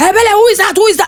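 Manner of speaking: loud, high-pitched shouting. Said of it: "she'll be shouting from the gate".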